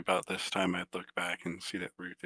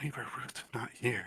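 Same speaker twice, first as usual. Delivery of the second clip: hushed, quiet, half-whispered voice; 4 semitones higher, 6 dB quieter than usual. Trying to stay quiet while turning to make their way back, half-whispering. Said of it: "I'm whispering, by the way, trying to be quiet".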